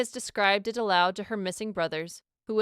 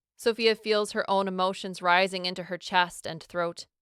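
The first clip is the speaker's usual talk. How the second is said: plain reading voice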